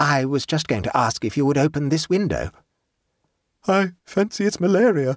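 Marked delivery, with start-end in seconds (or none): 3.7-5.2 slightly chattering, shivering, pitched-up voice through chattering teeth. A man tells his companion he thinks he is ill; teeth chattering slightly. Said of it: "his teeth chattering slightly".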